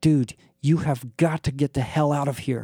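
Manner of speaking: furious whisper through clenched teeth. Narrator, leaning in close to someone in the corner, speaks in a furious whisper through clenched teeth. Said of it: "whispered furiously through clenched teeth".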